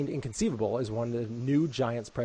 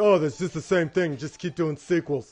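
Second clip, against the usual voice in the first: put-on dumb-jock meathead dude voice; 4 semitones higher, 4 dB louder than usual. Imitating critics who disliked a sequel: meathead voice. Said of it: "I like that Meathead voice you just did".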